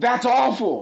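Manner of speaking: piercing, shrill, very high scream. Recounting how things got so bad, retelling Adam Sandler's scream in his face. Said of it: "screamed in his face".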